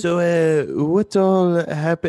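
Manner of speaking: attempted, put-on French accent. Starting a recap after the others ask for an accent: attempted French accent. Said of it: "you should at least try to do it in Dagonese accent".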